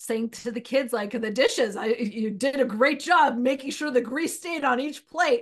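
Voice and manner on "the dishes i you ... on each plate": mock sarcastic, imitated sarcastic tone. Retelling how a husband talks to the kids: imitating sarcastic praise. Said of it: "Sarcastic person usually isn't very motivating".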